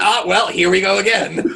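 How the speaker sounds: grumpy, grumbled aside. Retelling a film scene, imitating Zeus butting in like Waldorf and Statler. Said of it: "Just sort of like".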